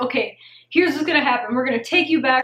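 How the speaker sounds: rattled-off, very fast rapid-fire talk. Retelling the surgeon coming to the bed without saying hi, talking really fast. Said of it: "started talking really, really fast".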